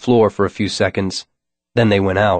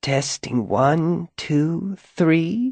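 dry, rasping voice, pitched up and soft; 8 semitones higher, 6 dB quieter than usual. A voice tests the pa system over the speakers, in a dry, rasping voice. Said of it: "a dry, rasping voice over the speakers".

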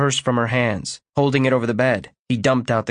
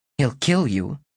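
ordinary delivery

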